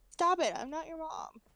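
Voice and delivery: high cat voice. Acting out what the other cat says to him: voicing the other cat. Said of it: "And she's like".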